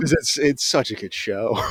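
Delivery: laughing through the words. Asked why they are laughing about a show, a viewer answers, laughing while talking. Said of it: "Why are you laughing?".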